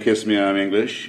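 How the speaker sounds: ordinary talk, nothing marked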